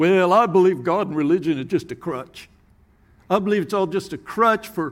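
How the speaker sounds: put-on Southern accent.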